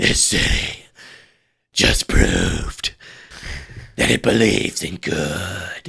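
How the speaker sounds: put-on, breathless, halting, rough, broken-up phrasing. Retelling a line Batman says while out of breath: imitating Batman out of breath. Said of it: "he's kind of out of breath, so he goes".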